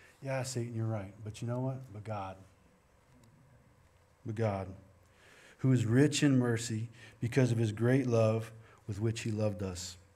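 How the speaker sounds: ordinary talk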